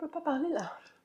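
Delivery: soft, high, tearful voice, choked up and breaking. Asked by the other speaker to talk about the game, the speaker can't go on: choked up, crying. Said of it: "ça me fait pleurer".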